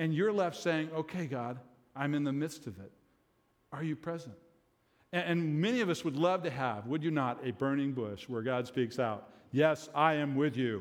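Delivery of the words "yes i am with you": big, slow, booming delivery. The speaker imagines God speaking out from a burning bush: voice of God. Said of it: "That's the best voice I could do there".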